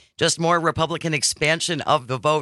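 ordinary talk, nothing marked

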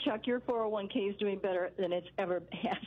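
plain

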